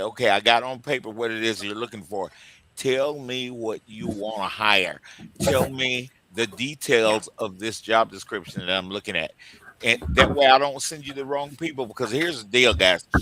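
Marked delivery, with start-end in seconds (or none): none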